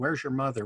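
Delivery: grave, very solemn serious tone. Retelling what the uncle asked on arriving: imitating a solemn tone. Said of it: "with this really solemn tone".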